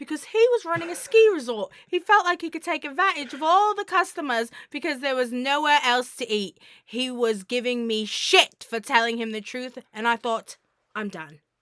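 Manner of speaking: very loud, high-pitched put-on British accent. Reading out a restaurant owner's quote to a news outlet, in a British accent. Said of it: "in your British accent?".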